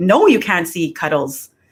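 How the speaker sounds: heated, fed-up, swooping mad voice, acted out. Recounting telling someone off at the front step, acting out sounding mad. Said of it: "that's kind of how I sound when I'm mad".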